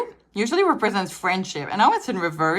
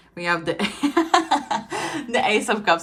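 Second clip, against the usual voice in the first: laughing through the words. Reading out tarot cards in a spread, laughing while talking. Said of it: "I'm laughing".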